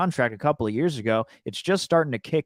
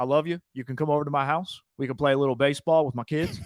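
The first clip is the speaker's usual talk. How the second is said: partly Southern put-on accent. In a comic bit as a Raider thanking fans, a mix of Southern accent. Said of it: "I'm doing like a mix of Southern".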